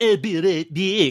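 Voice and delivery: bad Cajun accent, high, slow drawl. Recalling the animated series with friends, imitating Gambit: Gambit's bad Cajun accent. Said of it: "he was doing a Cajun accent".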